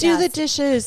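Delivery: furious, shrill, banshee-like screamed yell. Playing an angry screaming wife banshee in a bit: yelling like an angry banshee wife. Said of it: "As I'm yelling".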